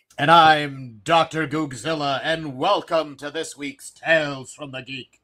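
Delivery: formal, official-sounding tone. Opening the show with a welcome to listeners: sounding official. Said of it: "you sound so official".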